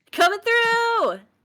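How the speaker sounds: loud yelling. Voicing a character who bursts through a door: yelling. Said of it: "just kicking every door open and just yelling".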